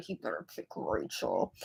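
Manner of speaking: very quiet, breathy whisper under the breath. Recapping the show, retelling how Mickey whispered to Kelly, imitating Mickey whispering. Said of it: "Mickey like whispered to her like".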